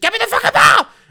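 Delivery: put-on very high, loud childish voice like a five-year-old. Describing a player who goes for the ball, imitating his childish demand. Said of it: "he gets really like five year oldy".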